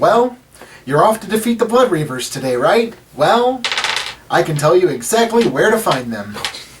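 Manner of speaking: relentlessly happy voice. A game master voices a morning-person guide talking to the party, cheerful. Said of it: "He just seems like he's happy all the time. / This guy's a morning person, he's pissing me off. He just seems like he's happy all the time. / and he says, / This guy's a morning person".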